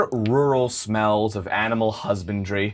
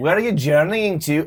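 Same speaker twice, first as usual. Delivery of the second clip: sudden, higher, put-on Scottish accent; 5 semitones higher than usual. Voicing a character who asks the travelers where they are headed: Scottish accent. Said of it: "I went Scottish all of a sudden".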